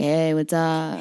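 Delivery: put-on drunk man voice. Retelling how a drunk dude at a frat party greeted her: imitating a drunk dude. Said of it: "Some drunk dude immediately comes up to me like".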